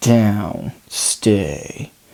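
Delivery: strict, low, soft, almost growled. Teaching strict dog commands, the words are said in almost a growl. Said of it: "You want to say it in almost a growl".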